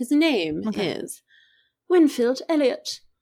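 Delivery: English accent, said slowly. Retelling a book's plot after being asked, English accent. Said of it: "say his name with a English accent".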